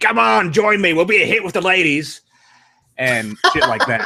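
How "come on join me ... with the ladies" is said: ridiculous put-on Cockney accent, pitched up high. Retelling a movie fight scene: Russell Crowe's ridiculous Cockney accent. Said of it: "this ridiculous Cockney accent".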